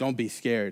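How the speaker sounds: very quiet, low, even monotone drone. Retelling a story, quoting what he said, in a monotone. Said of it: "I just hear him in this like really monotone voice".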